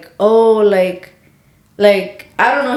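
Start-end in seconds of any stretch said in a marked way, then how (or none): none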